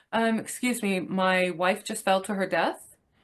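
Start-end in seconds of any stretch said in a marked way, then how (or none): none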